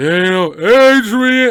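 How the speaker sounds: clumsy put-on voice, very loud, very slow, drawn-out. Answering a viewer's request for a Stallone impression: bad Stallone impression. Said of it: "I can't do a good Stallone".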